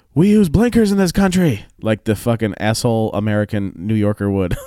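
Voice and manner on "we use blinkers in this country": shrill, very high shouted yell. Telling of a driver who cut in with no blinker, the speaker retells his own yell. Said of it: "So I yelled".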